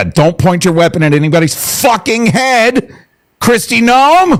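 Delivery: heated, fed-up, worked-up angry outburst, high pitched. Reacting to news about Kristi Noem, worked up and angry. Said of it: "I'm so fucking worked up about this".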